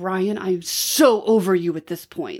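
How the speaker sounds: aggressive. Asked for an aggressive statement, the speaker tries one aimed at someone, aggressive. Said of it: "I could do it like".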